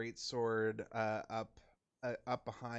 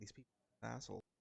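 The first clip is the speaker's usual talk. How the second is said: whispered aside, quieter; 10 dB quieter than usual. Whispering in character to reassure someone during a tense standoff: whispering in character. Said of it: "I'm just gonna whisper in air".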